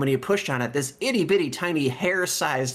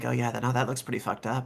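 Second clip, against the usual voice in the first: soft-spoken, mild, gentle voice; 4 dB quieter than usual. Voicing a character speaking from above the player: soft voice. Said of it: "soft voice from above you being like".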